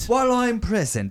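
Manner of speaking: put-on British accent. Echoing the announcement in a british accent: mock british accent. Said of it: "In a British accent, they announce that".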